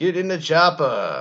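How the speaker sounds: slow, deliberate, loud, drawn-out high yell. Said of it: "in an Arnold Schwarzenegger voice".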